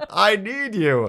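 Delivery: grand theater actor voice, very high pitched. Retelling an episode scene, imitating Picard in theater actor voice. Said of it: "He gets in his best, like, theater actor voice".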